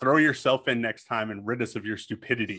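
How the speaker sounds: usual speaking voice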